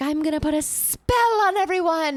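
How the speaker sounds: put-on shrieking, very high, loud drunken yell. Retelling a drunk neighbor yelling in the courtyard, imitating a drunk woman screaming. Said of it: "she was drunk and yelling in the courtyard, like screaming".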